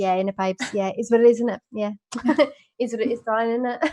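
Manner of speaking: reality-show contestant way of talking. Showing how they now repeat the phrase: imitating Love Island cast. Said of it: "We're like".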